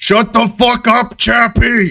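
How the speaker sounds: booming bellow, pitched very high. Voicing the boss yelling from inside at the paper boy: bellowing voice. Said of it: "you just hear a bellowing voice".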